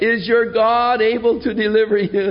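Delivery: mournful, high, lamenting cry. Retelling the scripture where the king cries out to Daniel: acting out a lamenting cry. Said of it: "sort of in a lament".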